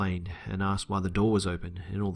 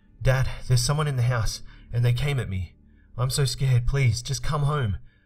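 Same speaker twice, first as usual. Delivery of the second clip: high, frightened, panicked scream; 5 semitones higher, 5 dB louder than usual. Retelling a phone call to dad after an intruder: retelling own scared scream. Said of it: "I screamed down the phone".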